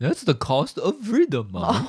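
high, swooping, whiny, complaining dog voice. Speaker voicing the dog's side of a family conversation, in the dog's voice. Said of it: "That's our dog's voice".

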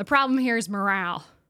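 mock, put-on Southern drawl. Retelling what a manager said at the bus bay: imitating a put-on southern accent. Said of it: "was adopting a Southern accent".

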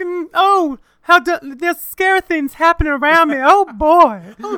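mock Southern belle accent, put-on. Do an impersonation that others say sounds nothing like her, in a put-on Southern belle voice. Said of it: "you're giving me the vapors".

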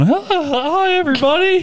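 voice cracking. Showing how their voice sounds greeting viewers on video, voice cracking. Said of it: "My voice cracks".

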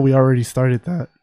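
voice cracking. Telling listeners about new sports content: voice cracking. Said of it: "voice crack".

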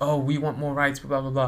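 ordinary delivery

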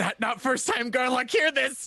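frightened, very high voice. Player voicing Garlock's reply during a game, Garlock, scared tone. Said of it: "in a scared tone".

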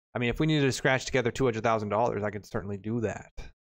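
ordinary talk

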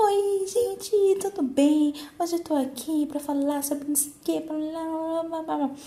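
forced, overly cheerful youtuber voice, way too high.

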